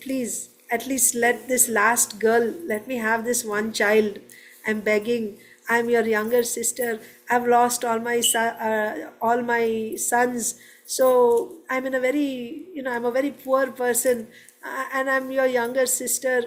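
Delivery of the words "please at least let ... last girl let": plain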